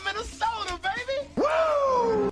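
very high, shouted wrestler-style hype call.

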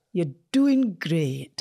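rolled-R accent attempt. Trying out an accent while friends critique it: rolling the R, Scottish-sounding. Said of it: "You're rolling the R".

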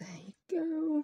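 whispered aside.

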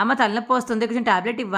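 plain reading voice

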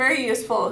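ordinary delivery, nothing marked

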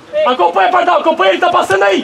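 loud yelling voice.

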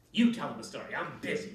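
loud, sharp snapping tone. The witch, told by Cat to tell a story, snapped. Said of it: "she snapped".

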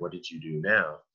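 whispering. Retelling what someone said as he was carted into the emergency room: imitating a whisper. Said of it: "she whispered at me".

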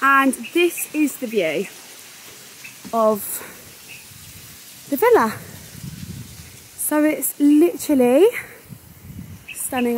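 out of breath. Showing the view of the villa after climbing the steps, out of breath. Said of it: "I'm so out of breath".

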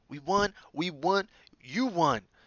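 very slow, stretched-out yell. Narrator reading a character thumping another on the back, shouting. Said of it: "Shouted Ron".

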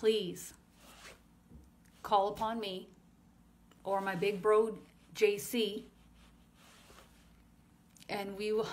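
holding back laughter. Relaying what he is saying to listeners, holding back laughter. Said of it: "I'm trying not to laugh".

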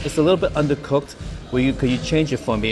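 usual speaking voice

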